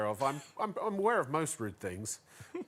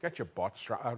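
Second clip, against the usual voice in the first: put-on Northern Irish accent. Asked to say a phrase in different accents, speaker tries a Northern Irish accent. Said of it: "Or Northern Ireland would be".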